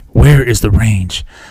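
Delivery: put-on mysterious voice in a monotone. Mocking an actor's same voice in every movie: Keanu Reeves voice. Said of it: "I'm gonna stop talking like this now".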